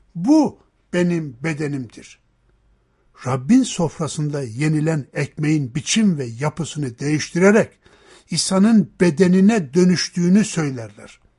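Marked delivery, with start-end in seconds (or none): 0.2-2.2 heavy stress on bu, rest of word lighter. Showing where some communities place the stress in a sentence: stress on bu. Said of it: "vurguyu özellikle bu sözcüğünün üzerine koyar".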